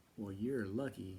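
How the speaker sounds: ordinary talk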